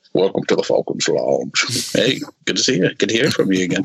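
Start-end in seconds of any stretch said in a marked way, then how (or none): 0.1-1.9 dropped deep, rough sci-fi villain voice. Greeting the host in a put-on voice: Darth Vader voice. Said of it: "that's my [name] Darth Vader".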